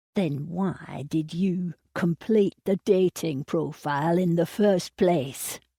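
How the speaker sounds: spoken tightly through clenched, gritted teeth. Narrator reads a man's reply, spoken through gritted teeth. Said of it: "talking through gritted teeth".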